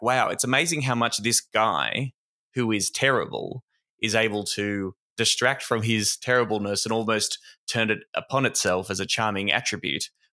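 ordinary talk

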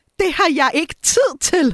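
acted near-shout. Telling about a woman talking to a secretary, the speaker imitates her almost shouting. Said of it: "og så nærmest råber hun".

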